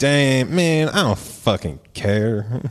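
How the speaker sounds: put-on drawling Southern US accent. Imitating how a man would react, in a put-on southern drawl. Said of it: "That's Southern drawl".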